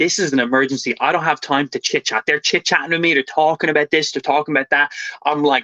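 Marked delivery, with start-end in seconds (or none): none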